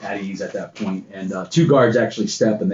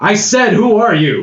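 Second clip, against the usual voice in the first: very stern, commanding voice, much higher and louder; 12 semitones higher, 9 dB louder than usual. A lady who demands respect confronts the stranger holding the Wayfinder: very stern, commanding voice. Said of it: "Very stern, very commanding voice".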